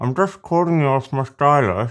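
muffled, mouth obstructed. Testing a stylus held in the mouth by making a phone call: talking with stylus in mouth. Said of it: "Why do you sound like that?".

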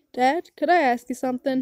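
plain

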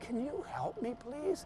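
high, soft, pleading whisper. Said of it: "And I whispered".

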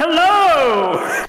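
very loud shouting with the word hello drawn out. In a role-play scene at the Ring of Heroes, give a very loud greeting. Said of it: "could you be any louder?".

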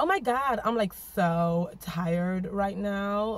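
fake American accent, very slow and drawn out. Letting listeners judge how good their american accent is: put-on american accent. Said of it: "you can judge how good my American accent is".

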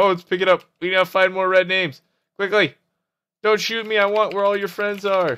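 urgent, high, loud excited rush.

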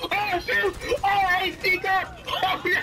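panicked freak-out with high cries.

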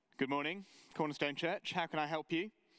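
prim, polite phone-answering voice. A preacher retells answering the church phone, in his best telephone voice. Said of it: "That's my best telephone voice".

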